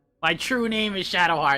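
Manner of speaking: mock weepy goth teen voice. Retelling a parody scene where the goth girl cries in her room: imitating crying Shadowheart. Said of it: "she's, like, crying in, like, a room".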